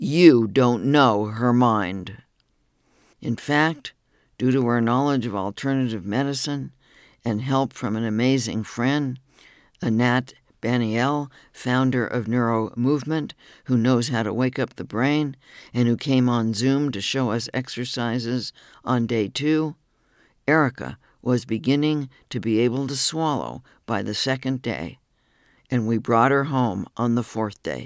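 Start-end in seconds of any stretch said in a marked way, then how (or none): 0.0-2.2 slow, loud, emphatic, every word stressed. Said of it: "quite emphatically".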